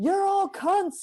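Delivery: put-on yelling. Retelling yelling at people in a hotel lobby: imitating own past yelling. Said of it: "yelling at people in the lobby".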